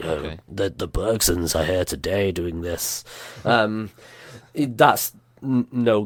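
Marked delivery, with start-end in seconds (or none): 0.0-3.0 rough, gravel-toned storyteller narrator voice. Imitating a game's gravelly-voiced narrator: imitating a gravelly-voiced narrator. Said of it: "this really gravelly voiced narrator who's like".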